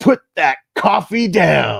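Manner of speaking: furious, loud, drawn-out scream, word by word. Retell a movie scene where a man stops someone pouring coffee, acting out a scream. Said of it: "He just screams".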